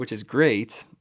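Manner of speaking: ironic, sarcastic tone. Saying the interview dates are still tentative: sarcastic. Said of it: "I'm being sarcastic".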